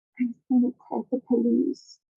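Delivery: timid, frightened voice. Retelling what was said to the police through a cracked door: imitating own soft voice. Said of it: "literally softly, softer than I'm speaking".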